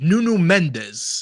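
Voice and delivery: native-style pronunciation of the name. Starting an analysis, pronouncing a player's name: proper accent on the name. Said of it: "pronouncing everything with a proper accent".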